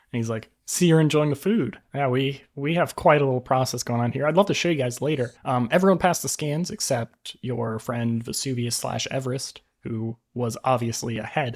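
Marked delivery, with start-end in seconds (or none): 0.6-5.3 self-satisfied, smug, proud boasting tone. Voicing a character pleased that the players enjoy the food: smug and proud. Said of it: "He looks super proud and, like, smug".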